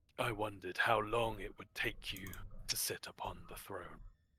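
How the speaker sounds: deep-voiced low speech. Voicing a presence that speaks to a player: deep voice. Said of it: "A deep voice".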